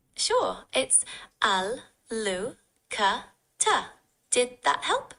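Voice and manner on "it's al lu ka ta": slow, each syllable said separately. Repeating an Arabic word more slowly after the learner asks, syllable by syllable. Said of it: "Can you say it again, but slower?".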